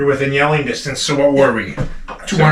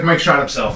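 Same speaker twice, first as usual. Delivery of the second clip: ordinary delivery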